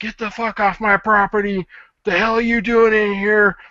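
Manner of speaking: in-your-face, shrill, very high-pitched yelling. Retelling how a seller confronted a photographer: imitating someone yelling. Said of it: "yelling at the guy".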